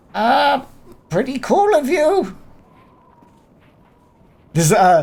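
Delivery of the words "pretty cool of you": timid, hesitant goblin voice, higher-pitched. Voicing a goblin answering the group after they call out: hesitant goblin voice. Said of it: "hesitancy in the voice of the goblin".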